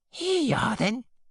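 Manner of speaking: very high-pitched, wheezy, kindly voice. A woman with her arms full comes in to her lodger: wheezing kindly. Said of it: "she wheezed kindly".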